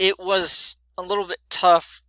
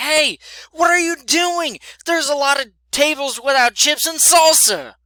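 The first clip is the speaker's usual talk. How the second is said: mad, raised, high-pitched voice; 10 semitones higher, 4 dB louder than usual. Retelling a man who came back to where they were cleaning menus: retelling a raised voice. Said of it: "but he raised his voice".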